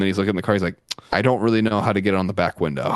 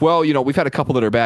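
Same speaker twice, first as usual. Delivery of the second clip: defensive tone, higher pitch; 5 semitones higher, 3 dB louder than usual. Retelling how someone replied after dropping the keys: imitating someone defensive. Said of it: "all defensive".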